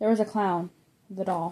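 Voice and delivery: plain reading voice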